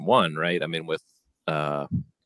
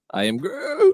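very high, raised, cracking voice; 6 dB louder than usual. Pitching a voice change for the character, try a cracking-voice Groot. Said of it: "A cracking voice".

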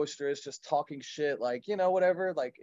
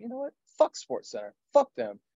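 put-on really mad, fed-up rant, pitched up; 8 semitones higher than usual. Retelling how a man reacted to ESPN trolling him online, mock-angry, retelling a rant. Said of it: "he just got really pissed off".

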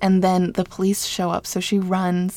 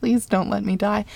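ordinary delivery

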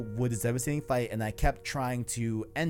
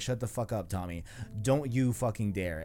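usual speaking voice

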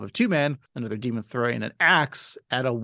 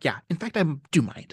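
snappy, annoyed, fed-up snapping tone; 3 semitones higher than usual. Praising a favorite voice-actor performance to the other speaker, imitating Frank Grimes's snappy annoyance. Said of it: "the snappiness of like annoyance of that character".

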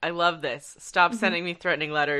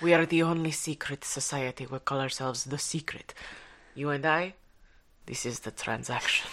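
put-on French accent, a little Russian; 2 semitones lower, 4 dB quieter than usual. Voicing members of the secret society being discussed: French accent, a little Russian. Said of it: "I like how your French is a little Russian".

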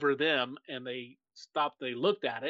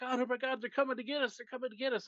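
mock panicked, freaking-out voice, much higher pitch; 11 semitones higher than usual. Retelling a UFO sighting, acting out a buddy freaking out. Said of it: "my buddy's like freaking out".

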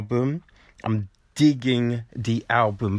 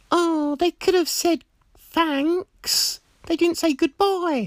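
put-on, very high female voice. Retelling what a friend said after the show: imitating a friend in female voice. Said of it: "that was my, uh, female voice".

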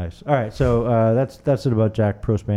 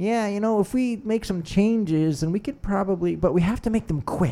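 squeaky-high, dutifully politically correct tone; 10 semitones higher, 4 dB quieter than usual. Retelling how everyone talked about climate change, imitating politically correct talk. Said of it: "doing the politically correct".

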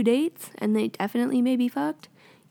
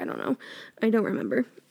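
plain

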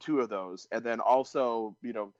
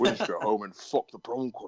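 put-on Scottish accent voice. Quoting a favorite movie line from The Rock: Sean Connery impression. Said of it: "That is excellent Sean Connery impression".

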